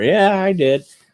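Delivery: high, offhand mock careless millennial voice.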